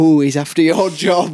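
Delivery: put-on Barnsley man's accent. Quoting what a man from Barnsley said, in a Barnsley accent. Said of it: "A man from Barnsley saying".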